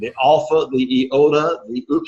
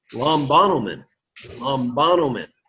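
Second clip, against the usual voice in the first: acute accent on second syllable of lombanomen. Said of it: "the accent is on the s-, acute, which is the second syllable".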